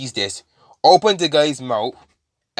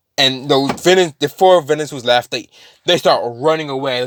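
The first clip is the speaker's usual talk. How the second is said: usual speaking voice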